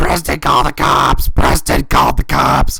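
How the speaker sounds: loud, slow, high scream. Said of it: "started screaming".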